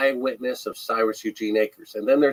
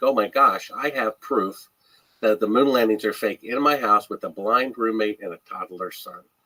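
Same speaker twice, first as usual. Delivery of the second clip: ordinary talk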